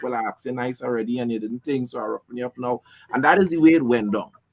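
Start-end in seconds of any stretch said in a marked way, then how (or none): none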